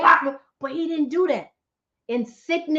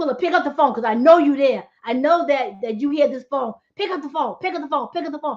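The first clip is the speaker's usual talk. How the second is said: ordinary talk, nothing marked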